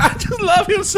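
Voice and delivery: weepy, gushing voice.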